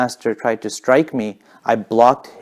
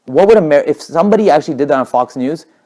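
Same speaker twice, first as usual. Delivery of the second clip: normal talking voice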